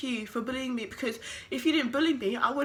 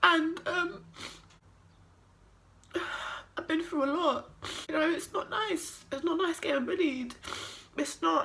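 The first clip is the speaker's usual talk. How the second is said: speaking through tears; 4 semitones higher than usual. Talking about having been bullied, crying. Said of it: "I'm sorry for crying".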